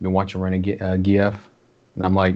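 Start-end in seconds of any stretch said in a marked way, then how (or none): 0.0-1.5 hushed whisper. Retelling how a guy quietly asked him about a show, whispering. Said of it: "And he whispers like".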